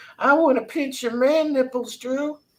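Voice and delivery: squeaky, very high-pitched put-on character voice. Imagining what a viewer secretly wants to say: imitating Papa Cotton. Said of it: "He wants to be like".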